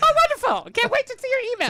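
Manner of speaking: very high, loud, gushing sing-song, insincere-sounding. Asking if the other speaker was sincere, repeating his reply: imitating Michael's high-pitched voice. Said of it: "your voice got really high pitched".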